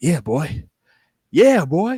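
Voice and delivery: screamed, loud, high, stretched long. Retelling own catchphrase during another's promo: imitating own past screaming. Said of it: "And just start screaming out loud".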